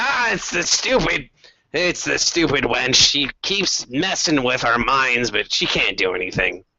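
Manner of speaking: dismissive, brushing-off goblin character voice. Voicing a goblin who dismisses a captive's messages: goblin voice. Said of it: "the goblin waves his hand".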